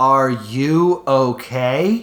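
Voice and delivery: super robotic, mechanical, machine-like delivery. Mocking the bad voice acting, imitating the line in a super robotic voice. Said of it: "we get this super robotic".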